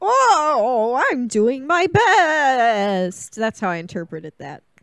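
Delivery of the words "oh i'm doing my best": very slow, dopey, pitched-up buffoon voice, stretched oh. Retelling a movie plot, mocking a bumbling agent's excuse: imitating Mark Ruffalo's character as a buffoon. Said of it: "he's just like".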